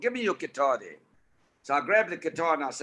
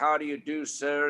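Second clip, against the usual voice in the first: put-on Tennessee accent, slower. Recalling a man on a movie set, quoting his greeting in a Tennessee accent. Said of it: "in that Tennessee accent".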